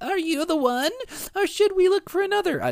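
very high, tiny, badly put-on baby voice. Imagining a tiny voice calling out from the womb: tiny baby voice. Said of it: "That's a horrible baby voice".

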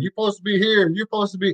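high shouting. Retelling a coach about poor spacing: imitating someone yelling. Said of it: "Cal is yelling, going".

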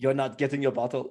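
put-on Jamaican accent. Repeating the other speaker's line back to them, in a jamaican accent. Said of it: "That was Jamaican".

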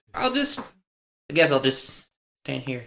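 stammered, halting, overwhelmed-sounding stuttering delivery. Player voices an overwhelmed Cliff as the others leave, Cliff stuttering. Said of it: "he kind of stutters and just like".

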